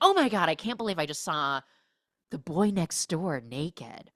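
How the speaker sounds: put-on caught-out, embarrassed, mortified outburst. Retelling a movie scene in the character's words: imitating embarrassment. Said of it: "And she's embarrassed".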